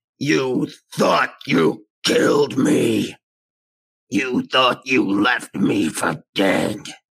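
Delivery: mechanical, machine-like voice. Narrating a metal-footed figure with red eyes emerging from the dust, mechanical voice. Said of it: "mechanical voice rings out".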